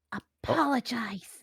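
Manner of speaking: sternly. Knocked to the ground, the speaker orders the pickle man to apologize, stern. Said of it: "like really sternly".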